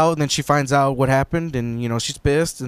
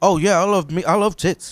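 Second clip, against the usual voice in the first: put-on British accent, pitched higher; 5 semitones higher than usual. Retelling what the British piano player said: imitating Henry. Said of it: "Henry, the piano player, the British guy".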